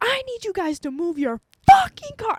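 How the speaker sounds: livid, very high, swooping furious scream. Recounting getting out of the car to make the drivers move, retelling own yelling. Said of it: "I start yelling".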